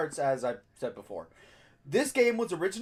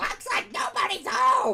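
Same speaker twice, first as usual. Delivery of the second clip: bad, high-pitched cartoon duck voice; 8 semitones higher, 4 dB louder than usual. Reading game dialogue aloud for viewers: Donald Duck voice. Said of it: "the worst Donald Duck impression of your lives".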